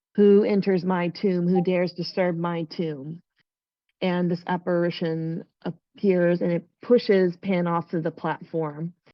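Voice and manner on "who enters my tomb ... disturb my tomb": ordinary talk, nothing marked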